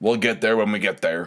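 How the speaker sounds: ordinary talk, nothing marked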